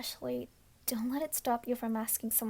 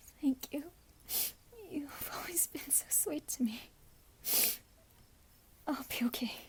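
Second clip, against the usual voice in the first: put-on tearful sniffling after sobbing, higher and quieter; 3 semitones higher, 4 dB quieter than usual. In a roleplay, a speaker who has been sobbing thanks the listener, sniffling after sobbing. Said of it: "[Sobbing & sniffling]".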